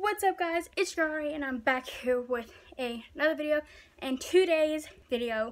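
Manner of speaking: panting, winded, out-of-breath voice. YouTuber opening a get-ready-with-me video after running upstairs, out of breath. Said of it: "I'm out of breath".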